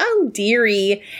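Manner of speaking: very nasal, affected put-on voice. Describing a character from Oz, imitating her very nasal voice. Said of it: "she sounds very nasally".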